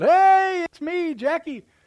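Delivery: very high, drawn-out hollered yell. Retelling how dad shouted after a shot rang out: imitating dad yelling. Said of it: "my dad yells out".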